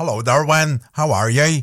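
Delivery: put-on Northern Irish accent. A radio host reads out a listener's message; Northern Irish accent as Eleanor. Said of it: "That's my Northern Irish accent".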